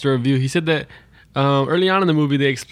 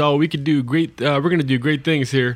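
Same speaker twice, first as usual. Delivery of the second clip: ordinary talk, nothing marked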